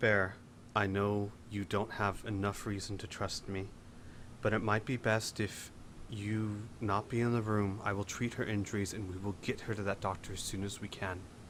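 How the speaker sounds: very quiet, soft-spoken, private voice. In a role-play, [name]'s character goes to Bear and speaks very quietly. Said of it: "and very quietly say".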